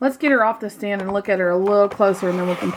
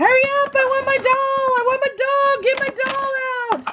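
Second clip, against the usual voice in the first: put-on very high, squawking child voice. Imagining an impatient kid waiting for a doll to come out of its box: imitating a kid squawking. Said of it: "can you imagine a kid squawking".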